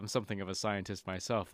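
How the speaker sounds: plain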